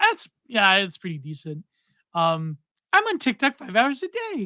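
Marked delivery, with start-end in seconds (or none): 2.9-4.5 put-on, pitched-up woman's voice, closely done. Trying to do a woman's voice, imitating a woman's voice. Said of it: "how do I do her voice?".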